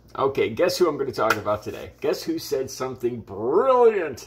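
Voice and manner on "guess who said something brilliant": heavy, tongue-in-cheek, ironic sarcasm. Host opening an early-morning channel video for viewers; sarcastic. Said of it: "I'm being sarcastic".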